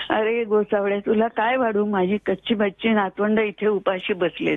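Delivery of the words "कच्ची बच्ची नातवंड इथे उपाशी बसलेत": ordinary talk, nothing marked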